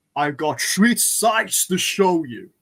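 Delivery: slow, loud, drawn-out delivery. Speaking to viewers in a Sean Connery-style voice. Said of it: "Is that a Sean Connery impression?".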